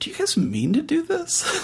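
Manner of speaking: very high, hushed mutter under the breath. Voicing a character reacting to the group, saying it under his breath. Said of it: "says under his breath".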